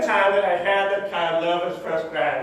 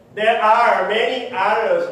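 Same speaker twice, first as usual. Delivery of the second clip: final S of others stressed, slow and louder. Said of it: "I'm emphasizing the S right now".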